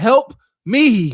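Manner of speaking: cracking pleading voice. Retelling what she said at the end: imitating a changed, pleading voice. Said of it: "her voice changed and her spirit spoke".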